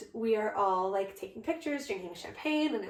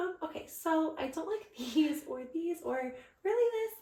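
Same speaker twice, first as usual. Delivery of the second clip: much higher, climbing, nervous pitch. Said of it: "my voice just kept getting, like, higher and higher and higher".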